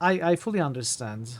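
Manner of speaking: ordinary delivery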